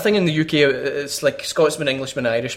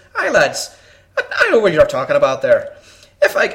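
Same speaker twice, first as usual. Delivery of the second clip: sing-song, laid-on, put-on Irish accent. Telling a joke, giving the Irishman's line: Irish accent. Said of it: "Then the Irishman says".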